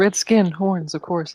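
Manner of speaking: quiet muttering under breath. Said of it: "under my breath".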